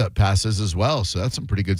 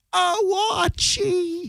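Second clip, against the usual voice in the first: shrill, very high oh, drawn out. Speaker recalls first seeing the TV character as a kid: shrill Edith Bunker voice. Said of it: "down to the shrill voice".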